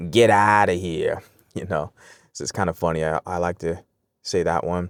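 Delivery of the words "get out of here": put-on slow Italian American New York drawl. Explaining regional phrases, the speaker says one in an Italian American New York accent. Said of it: "Italian American background will say".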